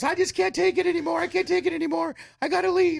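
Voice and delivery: very high-pitched tearful grandmother voice, crying. Retelling how a grandma on the show broke down: imitating a crying grandma. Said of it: "she starts crying".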